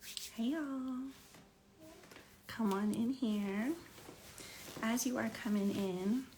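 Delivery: very quiet, hushed half-whisper. Welcoming viewers at two a.m. in Senegal, the speaker is half-whispering. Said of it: "I don't know why I'm whispering".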